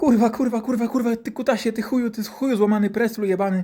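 put-on high, loud child voice screaming in pain.

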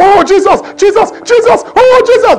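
frightened, drawn-out, high, rising fearful shouting. Mocking a frightened person calling out while robbers come: imitating fearful shouting. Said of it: "You were shouting in fear".

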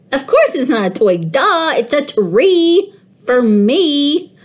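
high, gleeful, excited kitten voice, me drawn out. A kitten talks back after its owner scolds it, excitedly meowing. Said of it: "I meowed excitedly".

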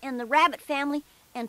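ordinary delivery

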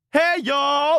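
full-on scream, very high, shrill and loud. Answering a request to scream the greeting: screaming. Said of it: "and scream".

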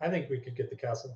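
low-key, quiet, under-the-breath delivery. A player telling two party members something in a busy establishment, speaking quietly. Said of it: "I'll just quietly say".

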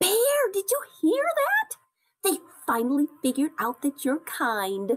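exclaimed, calling-out delivery. Coco speaks to Bear after the other animals' remarks, exclaiming. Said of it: "exclaimed Coco".

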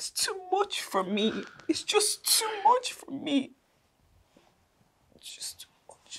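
tearful voice. Asked by a partner why they are crying, answering; crying. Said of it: "Why are you crying?".

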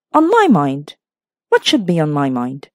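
fierce, suspicious, wary, low and swooping. A woman answers the narrator's question about her worries, fierce and suspicious. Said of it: "She spoke fiercely and suspiciously".

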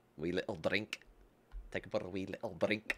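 put-on Scottish accent. Showing what you say to do a Scottish accent, a speaker puts on a Scottish accent. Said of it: "in order to do a Scottish accent, that's that's what you say".

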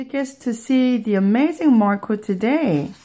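plain reading voice

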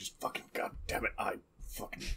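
incoherent, hateful grumbling, whispered under the breath. Voicing a character during a game scene: resentful mumbling under breath. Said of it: "Augustin is mumbling, uh, resentfully under his breath".

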